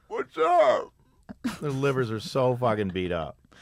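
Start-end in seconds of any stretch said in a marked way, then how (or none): 0.1-0.9 very high, squeaky, loud voice. Talking about bar regulars' livers, the speaker voices a liver: talking liver voice. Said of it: "You were a liver just now".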